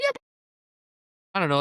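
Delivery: clumsy, rushed impersonation, high and swooping. Retelling what a man from Alabama said about a game: bad impersonation of an Alabama fan. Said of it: "That was a really bad impersonation of him".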